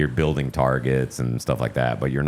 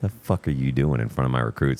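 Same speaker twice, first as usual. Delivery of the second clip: stern scolding tone, imitated. Retelling how a sergeant drill instructor corrected two staff sergeants: imitating a stern reprimand. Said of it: "sternly talks to both of these staff sergeants".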